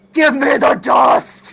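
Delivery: booming, drawn-out, gruff put-on masculine voice. Demanding the dust in character: attempted masculine voice. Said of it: "her trying to do a masculine voice".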